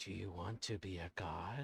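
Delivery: low, coaxing, tempting half-whisper. As the game master voicing the presence during an exorcism, half-whisper. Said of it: "the voice is going to whisper and say".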